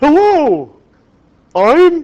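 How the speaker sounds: very high, loud, sing-song, swooping professor voice. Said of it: "he used to talk like this".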